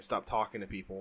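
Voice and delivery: ordinary talk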